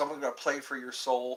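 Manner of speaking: ordinary talk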